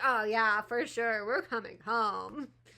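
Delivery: dripping sarcasm, overly eager and agreeable tone. Imitating how he just answered on screen: imitating a sarcastic reply. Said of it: "Why did that sound sarcastic?".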